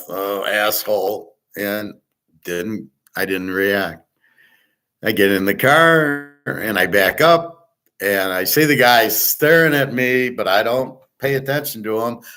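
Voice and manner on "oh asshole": put-on muttered whisper under the breath, lower. Retelling the guy's insult in the parking lot: imitating a whisper under breath. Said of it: "whispers under his breath".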